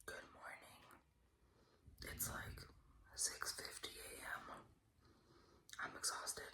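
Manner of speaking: soft, slow, drawn-out hushed whisper. Early morning, with the speaker's husband in the other room, whispering. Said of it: "I'm whispering because my husband's in the other room".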